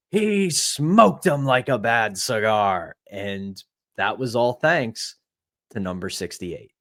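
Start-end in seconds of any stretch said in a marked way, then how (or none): 0.1-2.9 slow, drawn-out baritone call. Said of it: "with his signature baritone".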